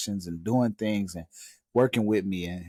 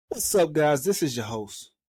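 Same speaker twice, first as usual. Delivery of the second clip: high, overdone, exaggerated show host voice; 6 semitones higher than usual. A podcast host opens the show greeting listeners, too loud. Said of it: "I'm too loud".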